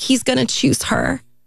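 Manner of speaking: put-on tearful, high sobbing voice. Retelling a phone call with a man, imitating own past sobbing. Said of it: "and I'm just sobbing".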